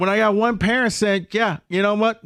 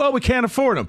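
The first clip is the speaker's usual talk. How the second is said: usual speaking voice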